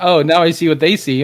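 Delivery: ordinary delivery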